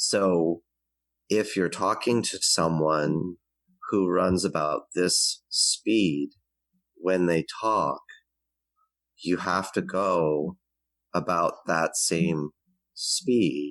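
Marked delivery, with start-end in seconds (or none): 1.3-13.7 very slow, drawn-out, each word stretched out. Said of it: "Kinesthetics tend to talk like that".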